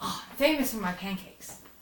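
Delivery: cheerful, chirpy halfling innkeeper character voice. Voicing a halfling barkeep greeting arriving players: chirpy halfling barkeep voice. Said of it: "He's always chirpy".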